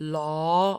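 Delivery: law with a questioning upward pitch rise. Sound practice with a rising questioning tone: rising pitch on law. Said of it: "aw with a rising pitch".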